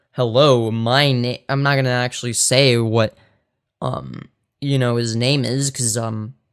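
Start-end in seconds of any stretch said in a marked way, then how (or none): 0.2-1.4 imposing, intimidating father's voice. Asked to do their best impression of their dad, intimidating dad voice. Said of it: "if I sounded like this".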